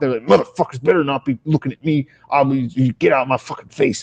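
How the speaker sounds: put-on full-volume muttering. Describing how crackheads talk, imitating loud muttering to oneself. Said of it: "muttering to themselves at full volume".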